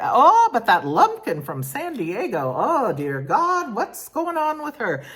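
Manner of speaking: put-on high, sing-song Scottish accent. Talking about a woman from San Diego, in a put-on Scottish accent. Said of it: "but in the Scottish".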